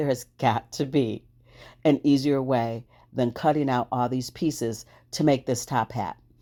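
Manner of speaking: usual speaking voice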